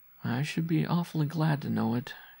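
weary, tired, worn-out, pitched a little high. A mother answers her insistent son, wearily. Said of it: "she said wearily".

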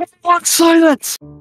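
very high, loud, panicky voice. Game narrator voices the ship's captain, whose panic is heard; panicked captain. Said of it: "You hear panic in the captain's voice".

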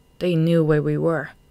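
plain reading voice

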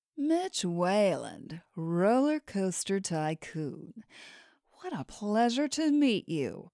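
sultry, sexy, throaty delivery. Narrator reads a woman in a VIP lounge greeting a roller coaster tycoon, sexy, throaty voice. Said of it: "the woman said in a sexy, throaty voice".

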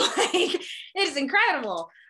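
high, loud, bright laugh full of delight.

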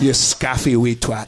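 Scots-accented delivery. Asked to do their Scottish accent, the speaker obliges: Scottish accent. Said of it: "Do your Scottish accent".

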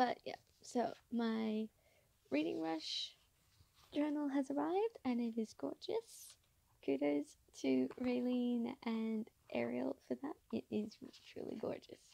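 very quiet voice. Recording late at night while everyone else is in bed, very quiet voice. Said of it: "I'm being really quiet right now".

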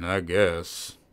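thick-voiced, slurred, blurred grunt. Narrator reads a silent man's first reply when asked if he's okay: thick slurred grunt. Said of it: "he grunted, his voice thick and his words blurred".

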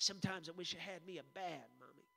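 low mumble, half under the breath. Retelling what a little boy said to his mama: imitating mumbling under breath. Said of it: "he just kinda mumbles under his breath".

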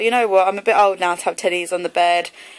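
usual speaking voice

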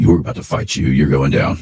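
stern voice. Showing one way to answer an enemy at the Alamo: stern voice. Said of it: "walk out with a stern voice".

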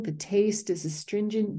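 ordinary delivery

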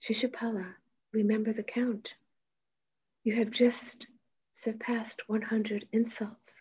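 quiet, composed, calm delivery. Retelling one man's answer to another who keeps insulting him, retelling quiet, calm words. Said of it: "say quietly and calmly".

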